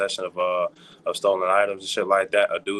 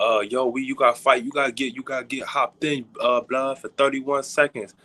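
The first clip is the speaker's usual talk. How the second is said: high put-on New York street accent; 5 semitones higher than usual. Retelling what a recruiter from New York said: imitating a New York accent. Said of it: "you sounded like you were from New York real quick".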